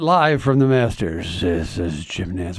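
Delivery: hushed golf announcer whisper. Imitating a sports announcer opening the Masters: Jim Nantz golf whisper. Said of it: "he does the golf whisper".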